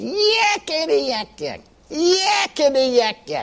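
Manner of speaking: piercing whistle-like holler, very high, very slow. Recounting someone who jumped and hollered, imitating a shrill holler. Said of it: "Shrill voice".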